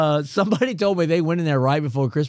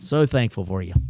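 sarcastic tone, lower; 6 semitones lower than usual. Greeting the others at the start of the year: sarcastic. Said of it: "so sarcastic there".

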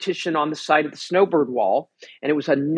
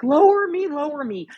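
mock shrill, very high, tearful screaming; 11 semitones higher than usual. Retelling a friend after a horrendous fall on the rope, imitating someone screaming, crying. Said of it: "She was screaming".

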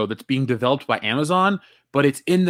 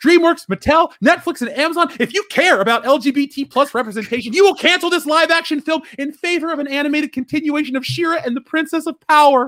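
earnest and pitched very high; 12 semitones higher than usual. Speaker directly addresses the studios and streamers, with conviction. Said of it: "I could hear the conviction in your voice".

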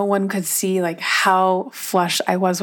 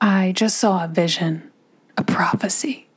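slower put-on southern preacher voice. Recalling nodding silently, the speaker announces it like a southern preacher in training. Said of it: "like a Southern preacher in training does".

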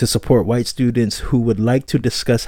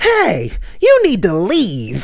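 very high, sing-song, swooping woman's voice; 9 semitones higher, 3 dB louder than usual. Describing a bystander who always speaks up during racist altercations, imitating a woman's voice. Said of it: "there's always a lady voice that says".

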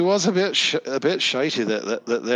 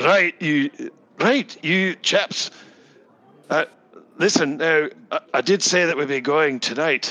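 businesslike dwarf voice, higher and slower; 3 semitones higher than usual. Game master voicing a dwarf who storms over to the table, businesslike dwarf voice. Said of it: "She comes storming over the table and she says".

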